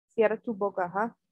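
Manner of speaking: ordinary delivery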